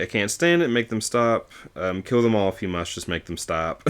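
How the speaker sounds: usual speaking voice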